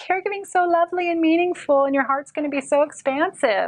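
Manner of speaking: high, fast, sweet patronizing gush.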